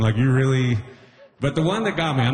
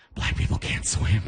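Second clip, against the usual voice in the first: hushed, put-on stage whisper; 5 semitones lower, 4 dB quieter than usual. Retelling an argument people made, imitating someone whispering. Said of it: "why are you whispering?".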